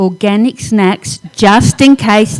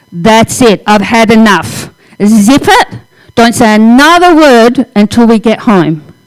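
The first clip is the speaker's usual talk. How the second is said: mock serious, stern, no-nonsense, attention-demanding voice. Speaker retells what they said for sanity's sake, in a put-on serious voice. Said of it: "I had to put on that serious voice".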